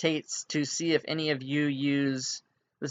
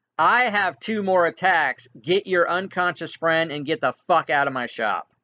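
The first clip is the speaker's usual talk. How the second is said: loud all-out yell; 4 semitones higher, 6 dB louder than usual. Voicing a shopkeeper ordering the party out of his shop: yelling as loud as he can. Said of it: "he yells as loud as he can".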